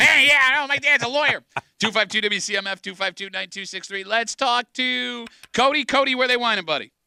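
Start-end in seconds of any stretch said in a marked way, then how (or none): 0.0-1.4 put-on, loud, pitched-up East Side kid voice. Joking after a caller hangs up: put-on East Side voice. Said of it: "that sounded like an East Side voice".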